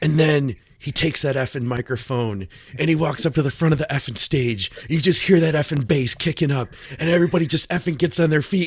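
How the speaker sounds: worked-up, thrilled, excited high-pitched rant. Retelling how Ron talks when he gets excited: imitating excited Ron. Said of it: "when Ron gets excited, he's like".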